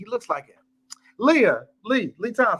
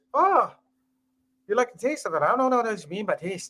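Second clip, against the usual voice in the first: decent put-on Irish accent; 3 semitones higher, 3 dB quieter than usual. Imitating another speaker after a remark on taste: irish accent. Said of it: "that is a decent Irish accent".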